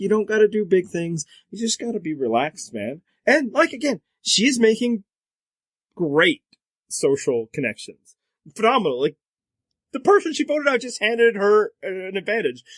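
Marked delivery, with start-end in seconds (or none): 0.0-3.0 imitated soothing tone with Midwestern accent. Imitating how a discussed Survivor player talks: imitating a soothing Midwestern tone. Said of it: "she's got this soothing tone, Midwestern tone".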